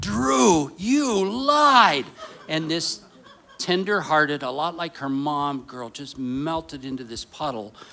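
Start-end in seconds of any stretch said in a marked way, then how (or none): 0.0-2.1 very loud, shrill, high-pitched coach bellow. Retelling yelling at a small child who lied: retelling a football coach yell. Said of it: "my former football coach voice came out ... I just yelled out".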